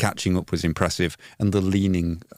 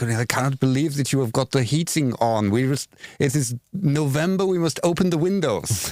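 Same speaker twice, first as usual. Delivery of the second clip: put-on German accent, pitched up; 7 semitones higher than usual. Imitate a TikTok impression of a stereotypical German mother that sounds exactly like Daniel Farke's voice. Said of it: "impression of the stereotypical, their stereotypical German mother".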